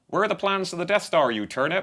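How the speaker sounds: high-pitched Bristol accent. Host tries out the guest's home Bristol accent, put-on Bristol accent. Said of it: "That's how they talk in".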